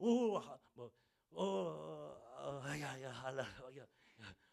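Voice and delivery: mock tongues-style ecstatic babbling.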